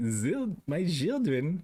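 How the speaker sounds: put-on German accent. Retelling what they say when going to their chickens: German accent. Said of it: "like German".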